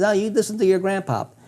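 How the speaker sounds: put-on slight, light Italian accent. Retelling a dream, the speaker quotes his grandfather with a light Italian accent. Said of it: "he had this little Italian accent".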